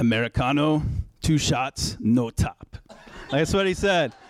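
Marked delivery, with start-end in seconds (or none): 0.0-2.8 bad Austrian accent, drawn out. Recounting a customer ordering at the counter, bad Arnold impression, Austrian accent. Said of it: "I'm going to do my best Arnold impression".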